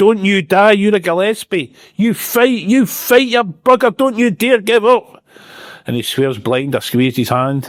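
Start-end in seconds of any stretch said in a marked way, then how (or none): 0.0-5.2 frantic, desperate, very high-pitched pleading scream. Retelling how their dad grabbed their hand and screamed: imitating dad screaming. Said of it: "my dad grabbed my hand and screamed".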